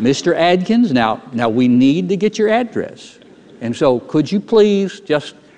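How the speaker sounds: very slow, deliberate, over-enunciated, distinct phrasing. Speaker imitating people asking for his address, very slow and distinct. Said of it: "they start speaking very slowly and distinctly".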